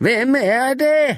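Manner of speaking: very high, shrill shrieking cry. Elisabeth shrieks at the narrator, startling them: shrill shriek. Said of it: "vrælede Elisabeth så skingert".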